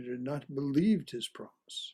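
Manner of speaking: stress on "believed", falling close.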